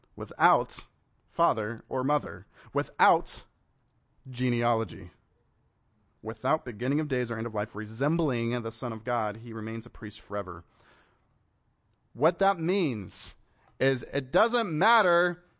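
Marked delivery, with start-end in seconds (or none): 0.2-5.1 deliberate, slow, halting, broken into small pieces. Reading a scripture passage aloud, repeating a phrase again, slower.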